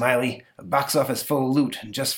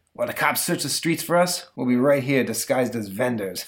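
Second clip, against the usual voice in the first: ordinary delivery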